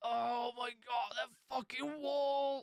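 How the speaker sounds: pained voice, very high, very slow, drawn out. Showing how a hurt patient should answer a doctor: sounding in pain. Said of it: "sound like you're in pain at least".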